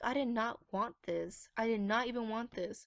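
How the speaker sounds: pissed-off voice. Retelling what she thought about the result: retelling own angry words. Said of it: "it made me so pissed off".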